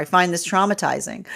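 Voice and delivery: ordinary talk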